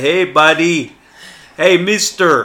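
put-on Russian accent. Retelling how an acquaintance from russia greets him: imitating a russian acquaintance. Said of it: "he'll say".

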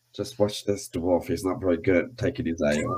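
low, hushed stage whisper aside. On walking in, a character half-whispers aside to a companion; half-whispering aside. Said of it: "I kind of whispered to".

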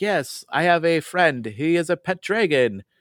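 slow, high, played-up put-on Dutch accent. Describing how the game's characters from the Netherlands talk: Dutch accent. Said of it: "I talk like this because like it's the folks are from the Netherlands".

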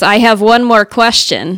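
strong, best-effort put-on Russian accent. Retelling what an Eastern European man said after a long conversation, imitating a Russian accent. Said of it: "my best Russian accent".

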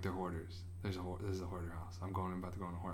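low, hushed, quiet inner voice.

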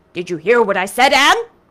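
severe, stern tone. Mr. phillips, the master, asks a stunned anne whether she heard him: stern. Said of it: "queried Mr. Phillips sternly".

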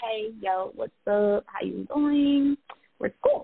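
relaxed and easygoing. Introducing themselves, the speaker demonstrates the style their name describes, very laid back. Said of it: "very laid back".

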